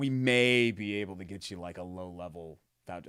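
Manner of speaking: slow, snide, snarky, indignant tone. Retelling how fundraiser organizers answered a question about pay: imitating a snarky reply. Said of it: "in a snarky, like, "How dare you ask?"".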